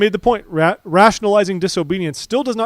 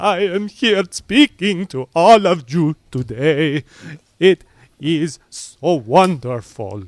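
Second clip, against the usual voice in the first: put-on very slow, drawn-out, robotic Argentinian accent; 2 semitones lower than usual. Imitating a conference speaker's way of talking: Claudio Zivic's Argentinian accent. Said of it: "he's just Argentinian, but he's like".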